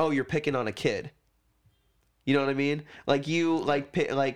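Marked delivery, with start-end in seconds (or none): none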